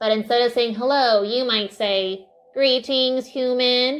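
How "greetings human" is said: put-on space-alien character voice. Showing a different way to say hello, in an alien voice. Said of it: "alien voice".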